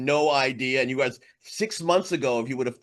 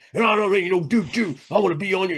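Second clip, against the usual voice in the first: pissed-off, worked-up, pitched-up angry rant; 5 semitones higher, 4 dB louder than usual. Retelling what a professor said while getting angry: imitating an angry man. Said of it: "he gets all pissed off about it".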